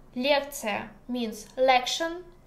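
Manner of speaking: ordinary talk, nothing marked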